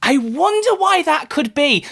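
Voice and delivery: angry sarcasm. Commenting on a dev blog announcing delays: sarcastic and angry. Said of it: "I'm gonna be so sarcastic and angry in this one".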